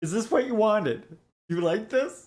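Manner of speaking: mock crying voice. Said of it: "You're making me cry".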